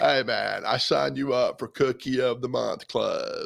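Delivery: put-on laid-back Texan drawl. Reading a comic strip aloud as Beetle Bailey: stuffy Matthew McConaughey voice. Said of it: "I'll be Beetle Bailey as the voice of a very, uh, stuffy Matthew McConaughey".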